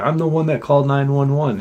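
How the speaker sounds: put-on yelling. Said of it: "And he yells his number out".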